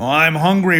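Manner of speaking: big, beastly, roaring lion voice. Reading a story aloud, speaking as the lion: roaring lion voice. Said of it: "roared the lion".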